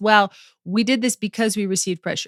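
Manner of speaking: ordinary talk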